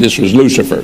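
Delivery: ordinary delivery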